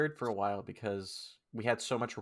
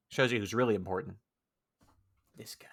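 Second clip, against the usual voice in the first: whispered voice. Bantering with another speaker, in a whisper. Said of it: "That's why I have to whisper".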